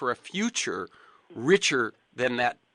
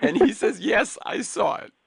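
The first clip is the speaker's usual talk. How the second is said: choked-up, tearful voice, pitched up; 10 semitones higher, 5 dB louder than usual. Recounting a child's answer about seeing the magical world beneath the sea, tearing up. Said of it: "I'm tearing up now".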